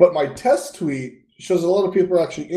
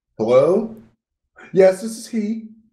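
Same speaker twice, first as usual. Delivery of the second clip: very slow, raised telephone voice. Showing how a voice changes when answering the phone: phone voice a couple notches up. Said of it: "it's a couple of notches up".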